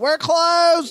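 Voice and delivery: very high, shrill, loud shout. Retelling how a lady at the closed gator farm shouted: imitating a shouting lady. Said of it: "the lady's shouting".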